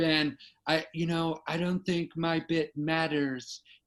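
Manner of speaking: slight put-on American accent, slow delivery. Quoting people who come up to him, slight put-on american accent. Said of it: "I'm trying to do a little bit of an American accent".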